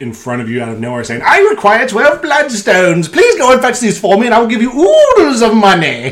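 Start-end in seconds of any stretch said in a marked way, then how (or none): 1.2-6.1 very high, swooping robot skeleton showman voice. Imagining a robot skeleton entertainer appearing in a tavern: voice of a robot skeleton entertainer. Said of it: "that's exactly how he would speak".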